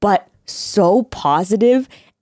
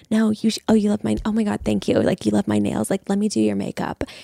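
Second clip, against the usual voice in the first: hushed whisper, much quieter; 5 dB quieter than usual. Retelling what a woman said while pretending to do makeup: whispering. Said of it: "she's doing all of it in whispering".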